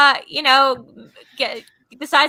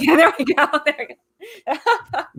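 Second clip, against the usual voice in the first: put-on light, high, amused chuckling. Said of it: "that thing where he chuckles lightly".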